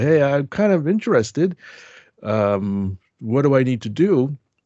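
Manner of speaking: put-on bashful, sheepish tone, slow. Recalling approaching the professor after his speech, act out your sheepish ask. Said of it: "kind of sheepishly said".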